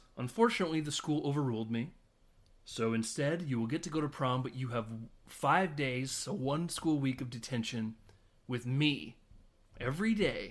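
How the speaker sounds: plain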